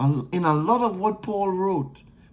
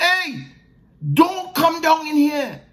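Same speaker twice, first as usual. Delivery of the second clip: mock high, full-throated yelling at top of lungs; 9 semitones higher, 4 dB louder than usual. Picturing being stuck in a dungeon and calling up to others: screaming at the top of voice. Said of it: "I'm screaming to the top of my voice".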